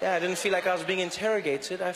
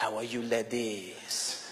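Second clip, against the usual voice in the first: low, slow, seductive put-on French accent; 8 semitones lower, 5 dB quieter than usual. Speaker showing the effect of a french accent, greeting the ladies: french accent. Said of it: "Speak with a French accent".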